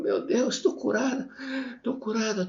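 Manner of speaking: acted, very high-pitched sobbing outburst. Retelling what a crying student exclaimed: imitating someone crying harder. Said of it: "começou a chorar mais forte ainda".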